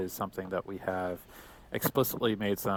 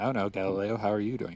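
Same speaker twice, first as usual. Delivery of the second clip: usual speaking voice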